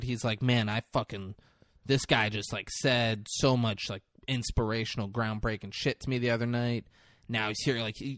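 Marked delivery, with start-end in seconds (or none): none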